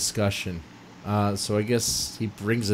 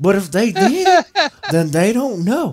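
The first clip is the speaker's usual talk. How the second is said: thicker put-on southern drawl, higher and louder; 12 semitones higher, 8 dB louder than usual. Reading the next paragraph aloud after being told to add drawl: heavier southern drawl. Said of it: "you need more drawl".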